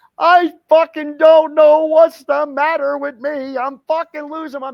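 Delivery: put-on very high, very loud tearful crying outburst. Retelling what Helen said after her mood swung: imitating Helen crying. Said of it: "again crying, saying".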